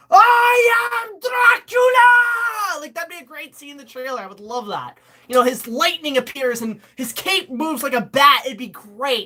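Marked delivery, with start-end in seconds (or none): 0.1-2.8 very high, shrill, declaiming shout, long drawn-out "I". Imagining an origin-story trailer scene where he becomes Dracula: shouting as Dracula. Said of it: "he just shouts".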